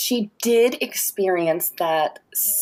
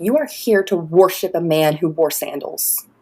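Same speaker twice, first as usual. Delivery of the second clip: mock furious, pissed-off angry outburst; 2 semitones lower than usual. Retelling how dad scolded old biddies in church, imitating angry dad. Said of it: "And my dad got pissed off".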